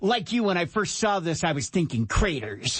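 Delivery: snarky, mock online-presenter voice. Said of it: "What the hell voice was that?".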